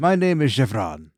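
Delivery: grand, self-important, proud announcing voice. Voicing a creature that stands up and declares its name: proudly announcing as creature. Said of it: "stands up proudly and throws its head back".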